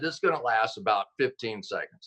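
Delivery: normal talking voice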